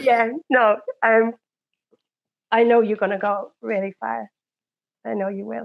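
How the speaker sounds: emotional, tearful, on the verge of crying. Thanking and congratulating the person who brought the friends together, tearful. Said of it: "I'm sorry, I'm gonna cry".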